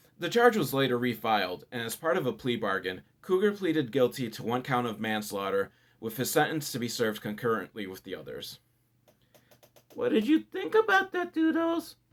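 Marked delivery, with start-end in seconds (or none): 9.9-11.9 very high, cutesy little voice. After reading a serious crime story, host asks Doodles in a cute little voice. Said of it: "I'm making that cute little voice".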